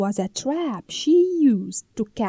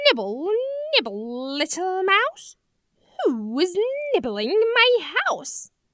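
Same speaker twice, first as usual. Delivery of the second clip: piercing, high, shrill voice; 6 semitones higher than usual. Reading Hansel and Grethel, a voice calls from inside the candy house; shrill voice. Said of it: "a shrill voice called from inside".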